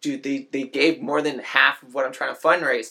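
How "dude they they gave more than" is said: plain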